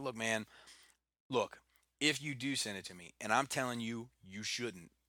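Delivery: ordinary talk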